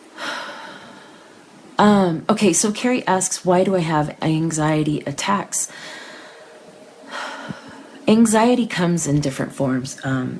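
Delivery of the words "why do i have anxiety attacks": ordinary talk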